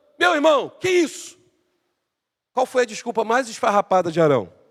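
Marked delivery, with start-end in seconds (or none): 0.2-1.4 high-pitched, angry, confronting tone. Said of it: "Aí ele chama Arão".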